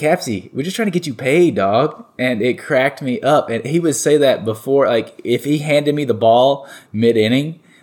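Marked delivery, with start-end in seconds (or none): 0.0-2.0 put-on heavy Boston accent, laid on very thick. Quoting a man who handed him the ball mid-inning, thick Boston accent. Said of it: "he had this really thick Boston accent".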